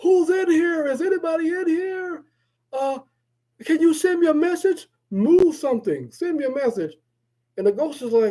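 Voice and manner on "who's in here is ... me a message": mock yelling, higher pitch. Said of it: "why are you yelling?".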